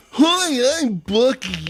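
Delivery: shrill, very high, very loud mascot voice. Looking at a gas station logo and voicing it: Bucky mascot voice. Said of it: "my immediate impression is".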